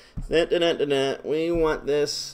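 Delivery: plain reading voice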